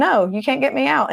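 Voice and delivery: high, put-on, mocking taunt through laughter. Retelling demons answering people who scream at them to leave, imitating demons laughing mockingly. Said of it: "the demons are laughing".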